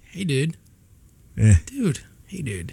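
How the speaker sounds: flirting, flirtatious tone. Coaching the other speaker, demonstrating the requested way: flirty. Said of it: "Now do it flirty".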